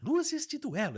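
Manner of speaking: very high, showy TV show announcer voice. Telling how you began imitating the presenter of a show you judged, do a Faro impression. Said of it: "comecei a pegar a imitação dele só falando luzes de duelo".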